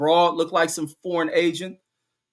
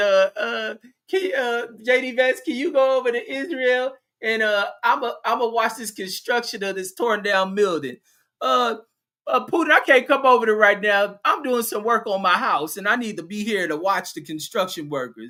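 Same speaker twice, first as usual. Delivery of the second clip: terrified, halting stammer with ums and uhs, pitched up; 6 semitones higher than usual. Speaker acts out Trump answering Putin's challenge, as a mock-terrified Donald Trump. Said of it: "Donald Trump got terrified".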